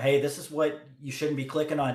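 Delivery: ordinary talk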